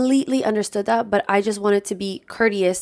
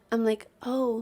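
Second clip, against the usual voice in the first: ordinary delivery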